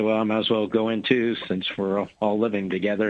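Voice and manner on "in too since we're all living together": normal talking voice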